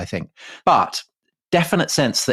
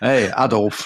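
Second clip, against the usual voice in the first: West Yorkshire pronunciation. Suggesting how the other person pronounced a name, in a west yorkshire accent. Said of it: "pronouncing it in a West Yorkshire way".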